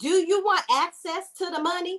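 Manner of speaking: sugary Southern sweetness. Speaker puts on a voice to question the listener, in a sweet tea voice. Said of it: "in my sweet tea voice".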